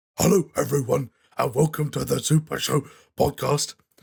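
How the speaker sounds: rough, high, loud dog voice. Opening the Super Show podcast, the speaker shows how it would sound in a dog voice. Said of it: "if I actually sounded like a dog".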